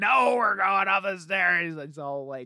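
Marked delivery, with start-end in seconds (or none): 0.0-1.7 mock, loud, frenzied, unhinged raging outburst. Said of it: "lunatic energy".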